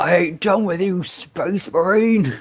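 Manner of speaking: very high-pitched, acted-out orc monster yell. Retelling where the orc climbs back over the edge, imitating the orc yelling. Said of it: "that's where he yells".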